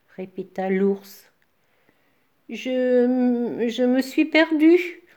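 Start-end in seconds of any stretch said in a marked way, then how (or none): 2.5-4.9 very slow trembling voice, "Je" drawn out. A young man answers a bear's repeated question, in a trembling voice. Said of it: "répondit le jeune homme d'une voix tremblotante".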